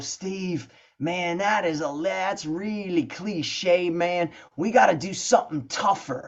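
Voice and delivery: put-on relaxed American southern accent. Retelling his friend's line from recording the first record, imitating Bill Ray's southern accent. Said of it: "in his southern accent".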